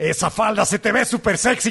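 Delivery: cross, furious, enraged delivery. Listing phrases that sound wrong said angry, spoken in an angry tone. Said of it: "Frases que no suenan bien si las dices enojado".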